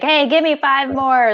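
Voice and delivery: put-on high-pitched screaming drill instructor voice. Contrasting their facility with boot camp, the speaker mimics boot camp screaming. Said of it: "you're screaming like".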